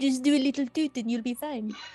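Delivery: put-on French accent. Asked to repeat a joke line with a French accent; French accent. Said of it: "can you say that with a French accent?".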